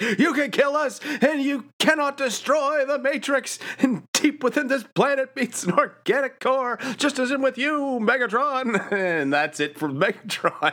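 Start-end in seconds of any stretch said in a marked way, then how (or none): 0.0-8.9 defiant, very high-pitched, rally-style proclaiming. Retelling a cartoon scene where a hero grabs the villain: William Wallace rallying speech. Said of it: "goes totally William Wallace here".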